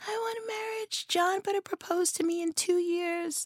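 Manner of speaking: small, soft little LA voice, pitched very high. Acting out women who want to get married, in a little put-on voice. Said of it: "Why am I doing that little voice?".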